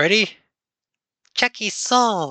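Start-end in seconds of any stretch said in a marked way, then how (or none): 1.3-2.3 bad put-on haunting villain voice, higher. Trying a horrible impression of the movie villain's haunting voice: horrible Phantasm impression. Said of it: "I'm gonna do a horrible impression".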